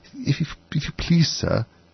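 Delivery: shy, timid, low, hushed half-whisper. Alice, ready to ask anyone for help, addresses the approaching rabbit in a low, timid voice. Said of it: "in a low, timid voice".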